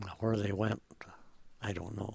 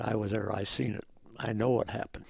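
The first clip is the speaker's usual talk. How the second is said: usual speaking voice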